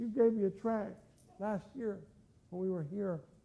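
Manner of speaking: mock weeping while speaking, woman's voice. Speaker retelling a woman's words to them at Walmart, imitating her weeping. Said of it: "and she started weeping".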